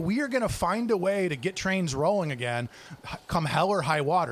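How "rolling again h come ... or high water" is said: ordinary talk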